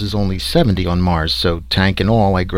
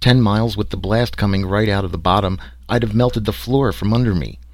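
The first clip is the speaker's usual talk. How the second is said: ordinary delivery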